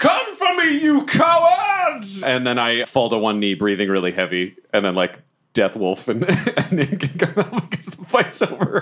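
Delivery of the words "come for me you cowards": loud, defiant yelling. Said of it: "and I yell".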